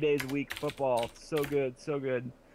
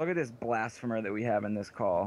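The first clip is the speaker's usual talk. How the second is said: plain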